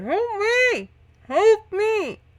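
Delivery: very high, slow, drawn-out muffled underwater-sounding cry. Game narrator voicing Elaine, still trapped in the bubble: calling as if through water. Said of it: "you hear kind of like through water".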